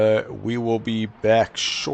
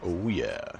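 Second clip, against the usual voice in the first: put-on deep, low bass voice; 5 semitones lower, 9 dB quieter than usual. Joking during race commentary about pushing a bass button: deep bass voice. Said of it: "I just push the bass button in my voice".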